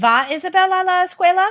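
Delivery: pitch lifting upward on escuela. Language lesson demonstrating a Spanish question, rising question intonation. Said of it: "My voice still rises on escuela".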